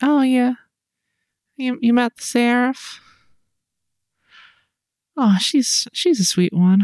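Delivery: sleepy, high, small, half-awake voice. Retelling hearing Anna speak while barely awake: imitating Anna, barely awake. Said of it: "hear a little little Anna voice".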